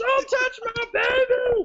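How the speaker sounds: put-on eerie, very high, slow drawn-out scream. Recounting how she screamed at him as the zombies came, retelling a creepy scream. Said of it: "screaming at him in a creepy voice".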